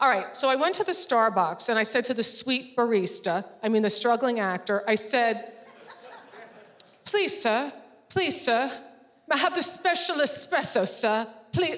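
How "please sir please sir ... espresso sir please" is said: mock pleading voice, humble and small. Ordering from a barista at Starbucks, begging like Oliver Twist. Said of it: "like I'm Oliver Twist".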